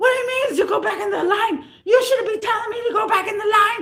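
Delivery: play-acted, angry, high screaming and hollering. Retelling what a man yelled as you walked toward his batteries, imitating angry screaming. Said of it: "He's screaming and hollering at me already".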